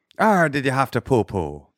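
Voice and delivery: put-on Irish-accented delivery. One speaker tries accents called out in a game with a partner, irish accent.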